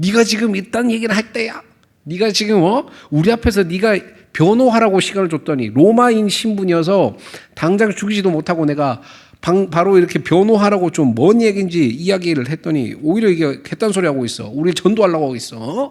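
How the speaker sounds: furious ranting.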